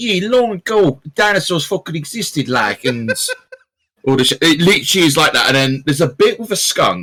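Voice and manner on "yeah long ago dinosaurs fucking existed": put-on heavy, thick Brooklyn narrator accent, pitched up. Describing the narrator of a pixel dinosaur animation, thick brooklyn accent. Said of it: "this thick Brooklyn accent narrator".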